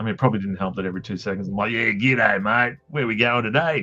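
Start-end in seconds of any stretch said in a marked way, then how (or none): 1.7-3.8 put-on broad bogan Australian accent, louder, slower. Explaining why people thought they sounded bogan, in a bogan Aussie voice. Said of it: "bogany sounding sort of a dude".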